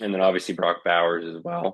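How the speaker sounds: voice breaking and cracking mid-line. A sports podcaster lists strong rookie receivers, and his voice cracks. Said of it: "Unfortunate voice crack there".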